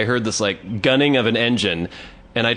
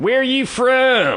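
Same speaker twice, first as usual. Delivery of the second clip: very high put-on yokel holler, from long drawn out; 13 semitones higher than usual. Retelling two strangers yelling from a pickup truck window, retelling a yell. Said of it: "Yelled out their window".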